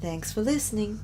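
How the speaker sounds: lady voice in announcer style. Quoting the recorded lady who speaks at the end, the lady voice. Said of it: "do the lady voice where she's like".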